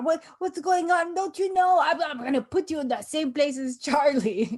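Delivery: put-on upset, loud, angry Moldovan-accented rant. Retelling how Andre sounds when upset: angry Andre impression with Moldovan accent. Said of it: "Andre get upset and he's like".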